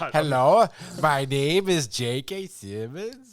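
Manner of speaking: heavy, very slow, fake Norwegian accent. Imitating the fake Norwegian accent from the movie: J K Simmons fake Norwegian accent. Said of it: "a fake Norwegian accent".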